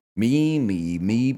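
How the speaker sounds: voice turning into a modem. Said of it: "make my voice sound like a modem".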